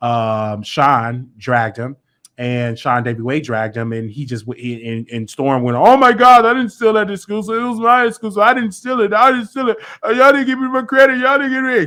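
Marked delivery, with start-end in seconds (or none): 5.8-11.9 very high, loud crybaby blubbering. Retelling how Storm answered being called out: imitating someone crying like a baby. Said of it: "crying like a little baby".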